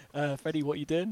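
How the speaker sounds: normal talking voice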